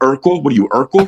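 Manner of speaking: high, loud mocking yell. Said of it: "someone will yell out".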